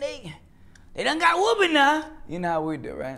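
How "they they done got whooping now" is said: over-the-top caricature voice, very high, swooping. Speaking of his own people, slipping into a voice he says he hates, exaggerated caricature voice. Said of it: "I hate that voice".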